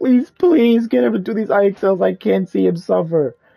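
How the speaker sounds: put-on teary, near-tears pleading voice. Speaker imitates a woman at report card pickup, mock-teary pleading. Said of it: "she has genuine tears in her eyes".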